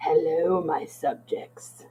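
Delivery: eerie disembodied voice from beyond. Voicing a voice from beyond greeting the players: voice from beyond. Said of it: "you hear a voice from beyond that says".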